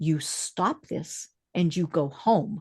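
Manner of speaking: calm, steady, soft-spoken delivery. Retelling a woman on TV ordering yelling men to go home, calm tone. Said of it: "in a calm tone of voice".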